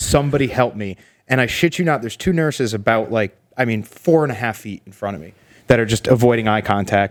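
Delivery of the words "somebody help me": put-on tearful crying voice. Retelling lying in a hospital hallway in pain: retelling a tearful plea. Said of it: "I'm at this point crying".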